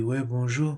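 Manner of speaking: calm, small put-on teddy-bear voice. Retelling how Francis turned and greeted him: imitating Francis's calm voice. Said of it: "il parle tout calme comme ça".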